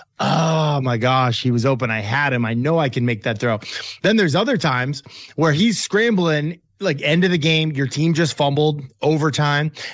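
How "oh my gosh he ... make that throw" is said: plain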